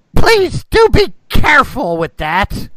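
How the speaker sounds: put-on very old voice, very high, shrill and very loud. Narrating as a player kicks the gate open, the speaker voices someone in a very old voice. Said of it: "You hear a very old voice".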